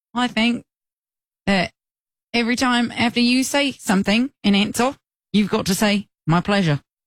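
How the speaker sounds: attempted British accent that slips into Australian. Making a game rule in a put-on British accent that sounds Australian. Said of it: "That's still Australian".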